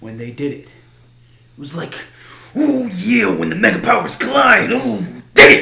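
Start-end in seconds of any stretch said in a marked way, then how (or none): 2.6-5.6 rough-edged pro-wrestler promo voice. Quoting the wrestlers when they finally did it: Macho Man Randy Savage voice. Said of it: "that what you tell your Macho Man?".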